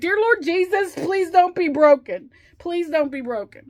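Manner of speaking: high, tearful, crying, pleading voice. Retelling praying after slipping in the shower: imitating her own tearful plea. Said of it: "I was crying".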